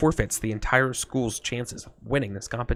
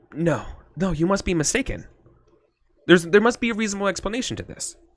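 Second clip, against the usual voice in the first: higher-pitched, disbelieving, incredulous tone; 7 semitones higher, 3 dB louder than usual. Voicing a character hearing a startling claim: in disbelief. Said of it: "I shake my head in disbelief".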